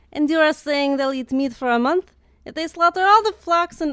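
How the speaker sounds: bad, unconvincing Israeli accent. Reading a passage aloud to the other speaker, in a terrible Israeli accent. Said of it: "My Israeli accent's terrible".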